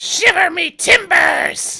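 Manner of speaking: piercing, shrill cry, very high and very loud. Voicing a cry heard from behind some bushes: sharp cry. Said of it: "a sharp".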